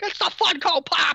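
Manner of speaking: very high, loud commentator shout. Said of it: "Can you imagine Mauro Ranallo shouting".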